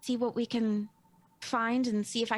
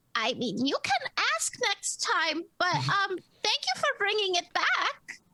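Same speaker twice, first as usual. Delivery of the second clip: very high, swooping, squeaky sing-song little turtle voice; 9 semitones higher than usual. A turtle speaks from the wall to whoever brought something back, little turtle voice. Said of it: "just the little uh, turtle voice that goes".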